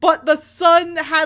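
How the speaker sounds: ordinary delivery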